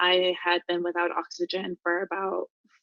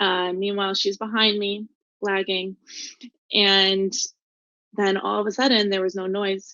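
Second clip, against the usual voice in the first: ordinary delivery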